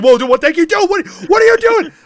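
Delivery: very high, very loud, rushed panicked delivery. Voicing a character backing away from lantern oil: panicked, freaking out. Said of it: "starts backing up in panic as he starts freaking out".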